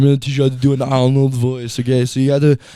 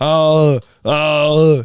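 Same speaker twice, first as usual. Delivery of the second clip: excited, higher, louder voice. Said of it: "But when he gets excited".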